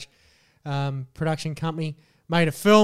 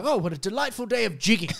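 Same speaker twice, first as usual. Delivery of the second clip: mock Cockney schoolboy voice, higher; 5 semitones higher than usual. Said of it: "I can hear that".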